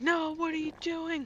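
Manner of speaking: high, loud, yelled. Retelling a dream where people outside the house yelled: imitating people yelling. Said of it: "yelling at me".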